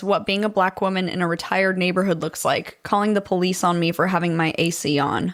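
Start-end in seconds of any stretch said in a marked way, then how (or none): none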